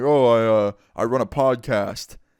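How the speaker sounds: very slow, put-on deep disguised voice. Retelling hiding from an angry woman who asks what they do, fake deep voice. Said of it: "doing this fake deep voice".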